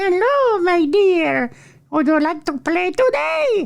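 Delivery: put-on squeaky finger-puppet voice, very high pitch. Reading a list item aloud, then voicing a finger puppet: put-on finger puppet voice. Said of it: "Finger puppet".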